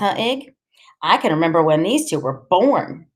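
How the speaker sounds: usual speaking voice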